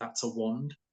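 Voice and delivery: whispered voice. Retelling whispering in someone's ear while a bishop used a rod: retelling a whisper. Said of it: "I just whispered in his ear".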